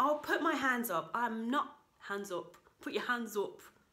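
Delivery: northern English accent slipping in suddenly. Speaker admits something and notices his northern accent slipping in. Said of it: "Just got northern all of a sudden".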